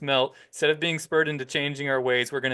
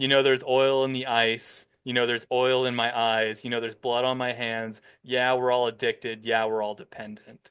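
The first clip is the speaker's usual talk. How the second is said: ordinary talk, nothing marked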